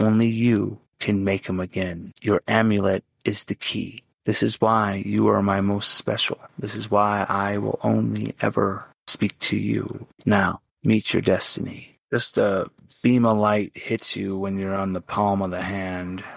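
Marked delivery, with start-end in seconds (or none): 0.0-12.0 gentle, soft, tender voice of a weakened god. A game master voices an unseen god speaking to a player's character, gentle voice of a dying god. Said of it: "And the god of order, [name], fades from the plane, suffering from the wounds that he suffered from Tharizdun. ... You just hear a gentle voice".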